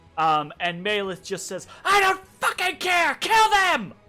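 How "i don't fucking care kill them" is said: shrill, very high, dripping-with-fury shout. Voicing a priestess answering her warrior's call: furious shout. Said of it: "there's just dripping fury in her words".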